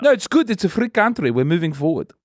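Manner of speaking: put-on South African accent.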